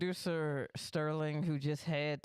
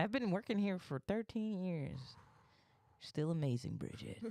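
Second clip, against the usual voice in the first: put-on slick, sleazy old-school 80s executive voice; 3 semitones higher than usual. Riffing on a boss who calls an employee the wrong name, 80s executive voice. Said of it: "sounds like an 80s executive that just talks".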